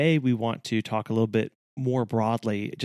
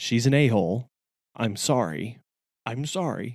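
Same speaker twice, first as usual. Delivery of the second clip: deadpan, flat delivery, slower. Retelling what the puppy's owners said at drop-off, retelling a deadpan remark. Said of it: "just deadpan stared at us right in the face and said".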